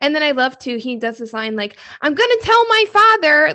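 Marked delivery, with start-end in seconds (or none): 2.0-3.5 put-on shrill, high, loud, squeaky wooden-boy voice. Talking about a movie trailer, quoting a character's line; Pinocchio impression. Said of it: "You sounded just like Pinocchio right there".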